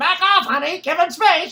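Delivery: loud, high-pitched squawking parrot voice. Retelling how the parrot copied the wife: parrot imitating wife. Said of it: "the parrot starts imitating my wife".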